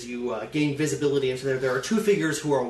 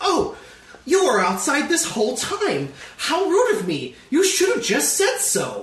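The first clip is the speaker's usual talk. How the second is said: very high-pitched, swooping droid voice; 13 semitones higher, 4 dB louder than usual. Voicing a protocol droid shuffling behind the foreman: protocol droid voice. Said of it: "the protocol droid ... stiff gait, says".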